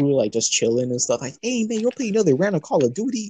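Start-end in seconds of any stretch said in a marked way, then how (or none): 1.4-3.3 acted-out, bubbly, upbeat, very high chatter. Describing a contrast, the speaker imitates a guy greeting a friend, mock-upbeat. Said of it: "like all upbeat".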